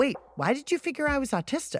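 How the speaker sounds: acted-out taken-aback, surprised tone. Reenacting own reply to the teen boy: reenacting own taken-aback question. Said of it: "taken aback by Jacob's bluntness".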